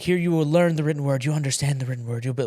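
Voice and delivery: lively, fast, animated delivery in full flow. Recalling a college teacher wrapping up his speech to the class, imitating an animated professor. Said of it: "this guy's like really animated".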